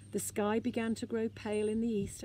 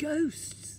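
high, terrified gasp of fright; 6 semitones higher than usual. Moomin Troll wakes Snufkin, terrified of lights among the sleepers: terrified gasp. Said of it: "he gasped".

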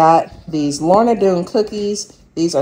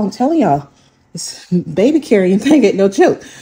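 breathless, puffing, winded, out-of-breath speech; 3 semitones higher than usual. Showing groceries to viewers while carrying a baby, the speaker admits it; out of breath. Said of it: "Getting out of breath, y'all".

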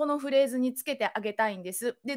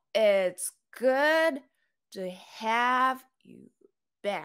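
stress on the words good, have and back; 2 semitones lower than usual. English pronunciation practice, stressing key words: stress on good, have, back. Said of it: "good とhave とback を強調したい。".

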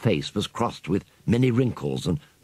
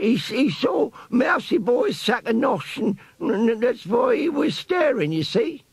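very high, slow, croaky squeak. Reading a story, voicing Barker the rat answering Piccadilly: Barker's croaky old rat voice. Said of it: "An old brown rat lay on the ground before him. His thin, chiseled face was crossed with many wrinkles, and the fur round his temples was grey. The rat was nursing his head and uttering indignant cries through gummy lips. ... squeaked a croaky voice as Piccadilly gave the tail a sharp yank".

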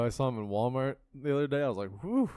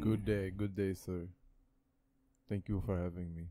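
fake European accent, lower, quieter; 5 semitones lower, 6 dB quieter than usual. Podcast co-host answering his introduction on the show: fake European accent. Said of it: "Why is [name] European?".

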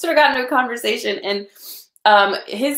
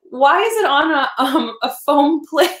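put-on, very slow, high, drawn-out speech through laughter; 5 semitones higher than usual. Retelling the reply to a dinner photo someone sent, asking while laughing. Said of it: "I'm like crying, I'm laughing at this".

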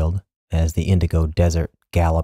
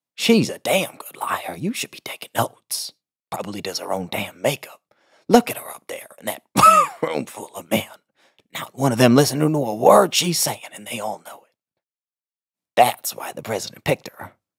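hoarse, pitched-up croak spoken on the in-breath; 6 semitones higher than usual. Narrator voices Jolene's mother speaking to her daughter: croaking, spoken on the inhale. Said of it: "Her mother couldn't muster the breath support to yell without triggering a coughing fit. ... Her mom liked to speak on the inhale, / her mother spat. / but still a croak. Her mother couldn't muster th".

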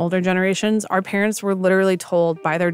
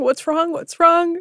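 acted frantic, high yelling, over and over; 10 semitones higher than usual. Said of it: "he just kept yelling".

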